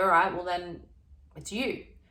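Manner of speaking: ordinary talk, nothing marked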